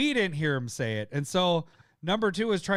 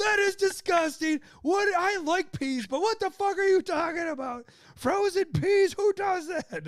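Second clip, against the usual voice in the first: mock berating, very high, shrill yell; 14 semitones higher than usual. Retelling yelling at the other speaker during a game: imitating own yelling. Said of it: "I was probably the worst at yelling at you".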